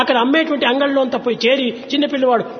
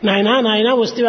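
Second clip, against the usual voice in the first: usual speaking voice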